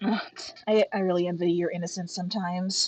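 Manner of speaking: low, half-swallowed mutter under the breath. Voicing Evelyn replying to another player's comment: muttering under her breath.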